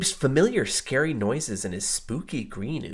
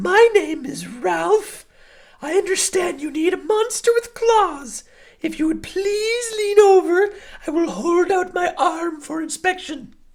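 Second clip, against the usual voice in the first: very high, silky, projected monster voice; 8 dB louder than usual. Reading a story where a second monster introduces itself; Ralph's high, silky voice. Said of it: "he said in a high, silky voice".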